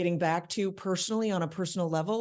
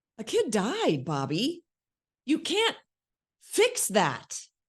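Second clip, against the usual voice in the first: horrified, disgusted, high and swooping; 5 semitones higher than usual. Acting out a scene, reacting to another character, disgusted. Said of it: "now I'm disgusted with him".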